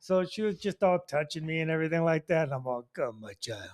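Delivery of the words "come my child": low, sinister, beckoning villainous voice. Retelling his own reply to a touchy young woman: mock evil voice. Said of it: "He's so evil".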